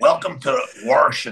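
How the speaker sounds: Washington with a heavy, added, leaned-on R. Retelling meeting a woman out there who greeted them, imitating a woman's heavy R's. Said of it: "they emphasized on the R's a lot".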